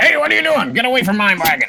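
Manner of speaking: put-on very high, shrill, swooping angry old dwarf yell. Voicing an old dwarven man chasing players from his wagon: old dwarven man shouting. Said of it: "an old dwarven man comes around ... and he goes".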